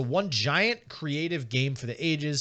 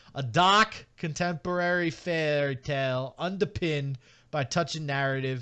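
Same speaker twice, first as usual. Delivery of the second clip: Boston accent, read aloud. Reading a game description aloud: Boston accent. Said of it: "See if I can pronounce the rest of this in Boston".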